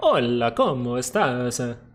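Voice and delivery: put-on Spanish spoken in an Italian accent. Imitating a brother who speaks a little Spanish, Italian accent on Spanish. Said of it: "he has an Italian accent when he does".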